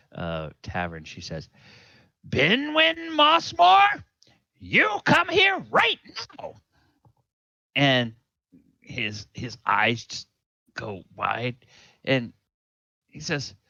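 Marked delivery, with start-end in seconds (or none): 2.3-6.6 loud carrying voice, higher and louder. Voicing a mother calling her son across a tavern: voice that carries across the tavern. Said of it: "with this voice that carries across the entire".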